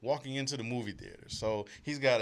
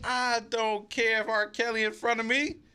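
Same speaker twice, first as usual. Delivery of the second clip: raised voice, higher and louder; 10 semitones higher, 5 dB louder than usual. Retelling getting loud at the movie theater so he could hear: imitating own loud remark. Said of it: "I got loud so he could hear me".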